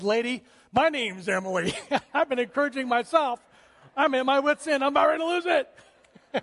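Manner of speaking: tearful voice. Retelling a worn-out mother answering the cashier: imitating a tearful voice. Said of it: "looked up with tears in her eyes and said".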